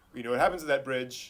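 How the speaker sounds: usual speaking voice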